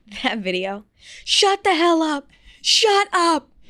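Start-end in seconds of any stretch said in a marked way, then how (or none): 1.2-3.4 mock scream, higher and louder. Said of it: "screaming at it".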